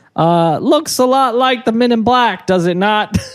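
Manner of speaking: very high, put-on Brooklyn accent, male voice. Speaker voices what some people have pointed out, in a Brooklyn guy voice. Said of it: "Like you're some Brooklyn guy".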